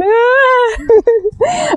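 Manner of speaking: high, wailing, lamenting cat cry.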